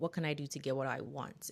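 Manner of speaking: ordinary talk, nothing marked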